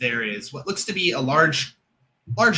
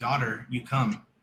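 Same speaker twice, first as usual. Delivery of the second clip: ghostly, eerie, hushed half-whisper; 3 semitones lower, 5 dB quieter than usual. Voicing a presence half-whispering to a player character: half-whispering voice. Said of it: "something whispering to you".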